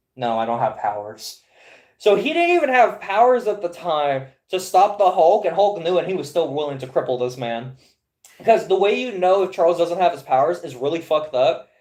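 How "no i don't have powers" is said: play-acted, sigh-laden delivery. Retelling a comic scene, acting out Charles giving in: acting out Charles sighing.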